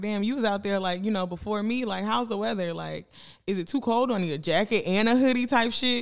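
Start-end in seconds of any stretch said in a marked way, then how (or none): none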